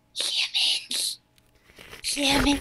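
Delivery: creepy, breathy whisper. Hoping the character Jensen gets this line, in a creepy Jensen voice. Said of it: "that's extremely creepy".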